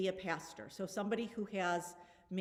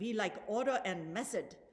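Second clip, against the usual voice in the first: very bad, hammy, put-on French accent. Saying that Lutherans like order and method: very bad French accent. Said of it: "that was a very bad French accent".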